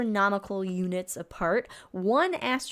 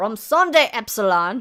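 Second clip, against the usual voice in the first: angry, mispronounced German, louder; 8 dB louder than usual. Speaker saying a German novel's title aloud, angry, bad German pronunciation. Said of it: "But you did say it angrily".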